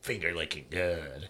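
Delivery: low, deep, slow, soft, menacing villain growl. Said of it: "Horace Pinker looks up and he's like".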